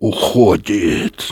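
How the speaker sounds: through clenched teeth. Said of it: "сказал Юрковский сквозь зубы".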